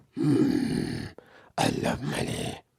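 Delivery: put-on old-man voice, very slow, creaky, drawn out. Retelling what Vince said about Twitch money, in Vince old-man voice. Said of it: "in his old ass voice".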